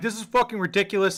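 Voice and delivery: mock panicked, freaked-out ranting. Retelling complaining to the one who trimmed the beard: imitating own freaking out. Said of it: "I'm freaking out now".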